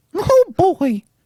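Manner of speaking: squeaked out, high-pitched and loud. Daring Disney to fight, then doing a Mickey Mouse voice. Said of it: "that's my impersonation".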